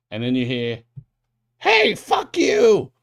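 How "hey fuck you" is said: shrill, very high, loud goblin scream. The narrator voices a goblin shouting at the party in a tunnel; screaming goblin. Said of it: "you see a goblin scream".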